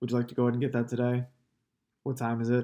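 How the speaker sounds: level, flat monotone with no rise in pitch. Asking for the order like asking the time, flat, no inflection. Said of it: "Same thing, no inflection of your voice".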